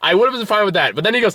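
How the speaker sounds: usual speaking voice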